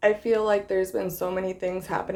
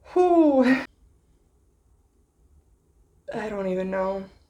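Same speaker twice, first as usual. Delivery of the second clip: teary, fighting to hold back tears. Starting a video while trying not to cry, holding back tears. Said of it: "I'm really trying not to cry".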